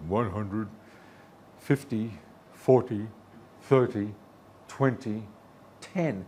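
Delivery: big, deep, automated announcer callout voice. Describing a landing, the speaker mimics the voice calling out height: big deep voice. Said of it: "some big deep voice".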